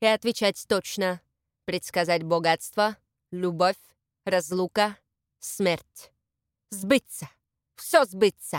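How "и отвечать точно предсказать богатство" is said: plain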